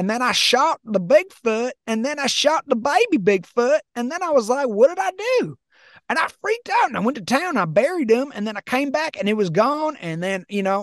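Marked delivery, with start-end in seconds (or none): 0.0-10.0 emotional, heartfelt hillbilly voice, pitched up. Act out a caller telling his story on a bigfoot show, imitating an emotional hillbilly caller. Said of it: "you hear the emotion behind his voice".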